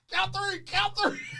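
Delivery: mock panicked wail, high and desperate.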